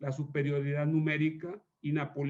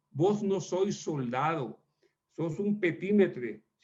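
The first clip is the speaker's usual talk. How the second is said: plain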